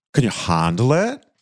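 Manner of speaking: put-on fake British accent. Opening a show and showing off a put-on British accent. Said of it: "can you even handle my British accent?".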